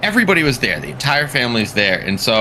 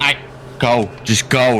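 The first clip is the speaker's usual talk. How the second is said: ordinary talk, nothing marked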